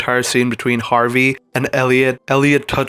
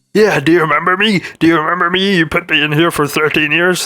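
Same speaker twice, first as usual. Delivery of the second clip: put-on character voice, pitched up high; 5 semitones higher than usual. Retelling what a man said to him, in a Kermit the Frog voice. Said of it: "I'm sounding like Kermit the Frog".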